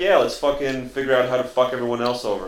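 ordinary talk

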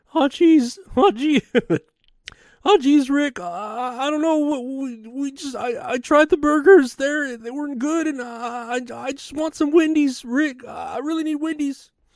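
worn-out, very high-pitched voice. Acting out a cartoon character asking for Wendy's: Morty voice. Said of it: "I'd do a better Morty".

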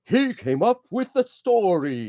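very slow, high-pitched, drawn-out delivery. Retelling the director presenting him to the crew: Avery Brooks impression. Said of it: "Incredible Avery Brooks impression".

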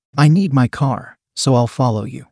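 ordinary delivery, nothing marked

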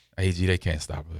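low, quiet whispering. Showing how a call in the huddle should be said: whispering. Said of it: "you gotta have that whisper voice".

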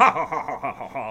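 very slow, drawn-out cartoon villain laugh. Talking about someone's old laugh, doing the Ted DiBiase laugh. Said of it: "I just sounded like a cartoon villain then".

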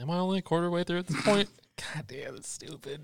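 high, whiny, whispered, despairing, defeated groan.

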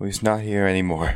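high-pitched, crying, sobbing words. Voicing a character who answers another character: sobbing while speaking. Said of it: "still sobbing".

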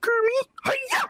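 put-on pig puppet voice. Asked to do Piggy too, answering Kermit, in a Miss Piggy voice. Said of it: "Do piggy, the piggy".

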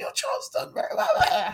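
put-on croaky voice. Speaker recalling losing their voice at parents evening, imitating their croak. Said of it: "croaking at them like".

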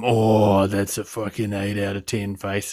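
low, soft creepy voice.

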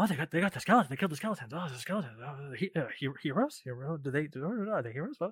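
put-on, very quiet, bewildered half-whispering voice. Voicing a crowd of townsfolk reacting to the heroes: put-on half-whispering townsfolk. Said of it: "you're kinda whispering".

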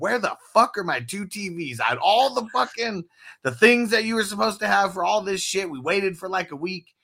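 loud, angry yelling. Retelling going back the next day and yelling at the manager: retelling yelling at the manager. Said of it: "yelling at the manager".

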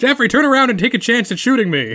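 yelling, high-pitched and loud.

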